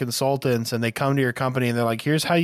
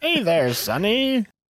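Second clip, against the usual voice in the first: put-on old person voice, higher; 8 semitones higher than usual. Acting out answering a phone scammer's call: put-on old person voice. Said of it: "You don't have to overdo it like that".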